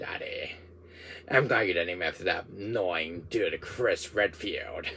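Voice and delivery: deep, soft villain voice. Imagining his future son talking to him, the speaker uses a deep Wesker voice. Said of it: "You have that deep Wesker voice".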